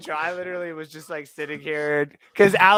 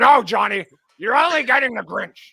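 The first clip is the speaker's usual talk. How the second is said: loud, booming comic character voice; 4 semitones higher, 6 dB louder than usual. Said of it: "I've been doing the Grinch voice all day".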